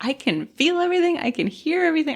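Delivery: put-on hysterical terror, very high, rising panic. Retelling feeling everything when staff could give no more anesthesia: retelling hysterical panic. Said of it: "I was just like hysterical".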